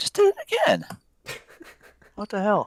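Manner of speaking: voice cracking, breaking way up high. Trying to set a limit order, it repeats again: voice crack. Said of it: "nice voice crack".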